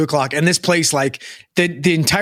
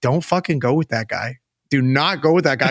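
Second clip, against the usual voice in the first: mock whispering. Retelling an old man's warning after getting off the plane: imitating a whisper. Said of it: "whispers to me".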